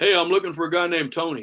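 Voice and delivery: put-on Houston, Texas accent. Retelling a driver in Houston walking up to pick the speaker up, in a Texas accent. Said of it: "I'm using the accent because this is Houston".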